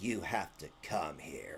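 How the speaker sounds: low, slow, intimidating and threatening tone. Retelling what another streamer said into the camera: imitating a menacing voice. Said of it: "in your menacing voice".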